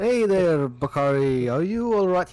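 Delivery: tender, gentle, careful tone with real care. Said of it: "talking basically to somebody, like, in a delicate mind".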